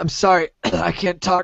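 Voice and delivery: faking a frog in the throat. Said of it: "I got a frog in my throat".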